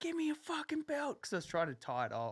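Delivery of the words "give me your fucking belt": put-on screaming, very high and shrill. Retelling what was yelled at a policeman: imitating own past screaming. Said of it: "I was screaming at him".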